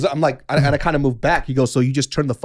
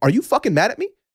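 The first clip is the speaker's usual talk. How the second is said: angry voice, pitched higher; 6 semitones higher than usual. Retelling a confrontation over a double-booked sauna: imitating own angry words. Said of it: "I'm getting a little fucking angry".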